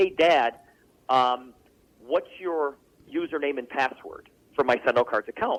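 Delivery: ordinary talk, nothing marked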